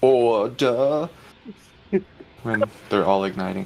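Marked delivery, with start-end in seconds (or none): 0.0-1.1 high-pitched, failed fake British accent. Imagining raptors as a british parliament, in a bad british accent. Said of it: "That was not a British accent".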